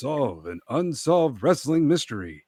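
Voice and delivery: ominous TV mystery-show host voice, narrator style. Calling a wrestling match, making it exciting with a Robert Stack impression. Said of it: "It's my Robert Stack impression".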